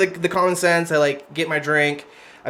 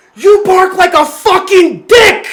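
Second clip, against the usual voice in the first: put-on woman's scream, higher and louder; 11 dB louder than usual. Retelling how the screaming woman turned on the speaker: imitating a woman screaming. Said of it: "screaming at these guys".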